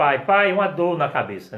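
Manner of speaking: put-on child's loud, high-pitched cry of pain.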